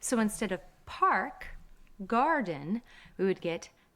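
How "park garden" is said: American English, R pulled far back. Teaching an Irish accent, the teacher contrasts it with an American English accent. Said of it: "In an American English accent".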